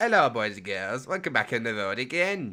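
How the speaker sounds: put-on northern English voice. Imitating the northerner from the clip just played: Rate My Takeaway impression. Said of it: "You know what I mean?".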